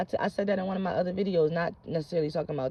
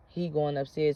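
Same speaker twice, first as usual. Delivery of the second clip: usual speaking voice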